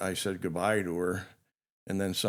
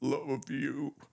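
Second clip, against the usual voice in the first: put-on strained, struggling voice, higher pitch; 7 semitones higher than usual. Retelling what he said between wheezing, imitating a struggle to speak. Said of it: "you could tell he was struggling to say it".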